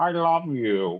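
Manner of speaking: high, put-on little fish voice. Voicing a recorded message that plays on repeat, in a best fish voice. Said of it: "in my best like fish voice".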